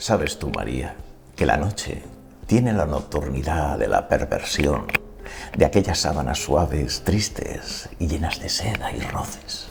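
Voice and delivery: very low, heavy, thick late-night radio announcer voice. Answering María, the speaker puts on a deep radio announcer voice. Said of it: "la voz de radio; con la voz muy gruesa; He impuesto la voz".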